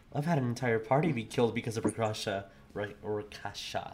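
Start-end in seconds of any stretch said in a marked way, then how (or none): 0.1-2.4 muttered under the breath, quieter. Retelling a player's remark from going off break: imitating a mutter under the breath. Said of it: "just little mutter under his breath".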